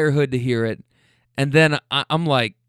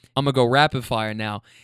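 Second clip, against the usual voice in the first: ordinary delivery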